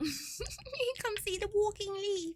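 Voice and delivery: put-on British accent, pitched very high. Speaker demonstrates saying phrases heard elsewhere, in a British accent. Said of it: "spoken in like a British accent".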